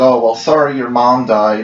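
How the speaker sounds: ordinary delivery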